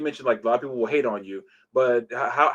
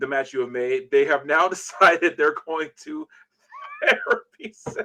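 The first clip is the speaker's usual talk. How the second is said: words breaking with laughter, swooping pitch; 4 semitones higher than usual. Asking about a match someone made, laughing while talking. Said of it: "I was trying to say that without laughing".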